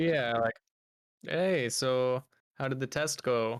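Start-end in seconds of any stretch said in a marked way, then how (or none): 1.2-3.6 smug, knowing, leading tone, said slowly. Asking another character in the scene how the test went: smirking. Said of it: "I say with a, a smirk".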